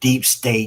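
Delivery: "deep state" said in scare quotes. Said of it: "air quote".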